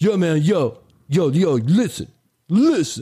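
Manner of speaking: put-on very slow, drawled, slangy kid voice.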